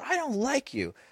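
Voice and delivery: play-acted very high, soft, tearful kid's voice. Retelling his words to the speaker, imitating someone crying. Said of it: "Like he's crying".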